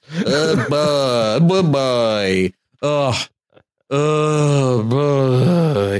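put-on tongue-tangled delivery. Asked to repeat a catchphrase, saying it like the tongue is mad at the mouth. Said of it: "I gotta say it like my tongue is r-, mad at the rest of my mouth".

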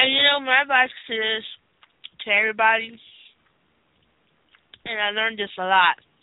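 speaking around candy, mouth full. Giving advice to everybody, talking with candy in mouth. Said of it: "I got Starburst in my mouth".

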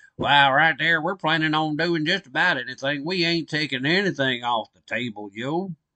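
hammed, put-on East Tennessee country accent. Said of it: "In my East Tennessee hit country voice".

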